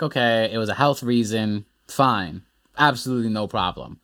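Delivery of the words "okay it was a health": usual speaking voice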